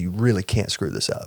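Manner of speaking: ordinary talk, nothing marked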